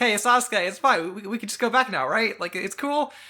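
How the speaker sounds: very high, loud, anxious, nervous blustering delivery. Acting out a scene where Naruto talks to Sasuke: imitating Naruto's anxious bluster. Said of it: "anxious bluster of".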